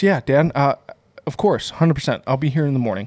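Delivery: ordinary talk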